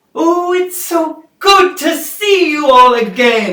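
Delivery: loud, high, warm, glad holler from a distance. Voicing a shopkeeper calling out from the back room: calling out warmly. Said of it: "you hear the familiar voice from the back call out".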